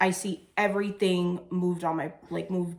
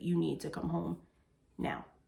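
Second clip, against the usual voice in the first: put-on calm, quieter voice; 8 dB quieter than usual. Retelling a phone call, the speaker quotes what the caller said, retelling a calm voice. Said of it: "in a calm voice".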